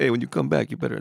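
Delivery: put-on Italian mobster voice. Retrying a joke's punchline after a failed French accent, Italian mafia guy accent. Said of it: "that should have been an Italian mafia guy".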